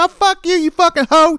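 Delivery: put-on shrill, very high little-girl yell. Retelling what an eight-year-old girl yelled at a lady: retelling a girl's yell. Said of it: "She started yelling at the lady".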